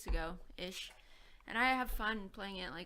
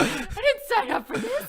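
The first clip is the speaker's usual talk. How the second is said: put-on high, loud, drawn-out flustered middle-aged lady voice; 16 dB louder than usual. Protesting that the others trapped them: put-on flustered middle-aged lady voice. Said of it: "your flustered middle-aged lady voice".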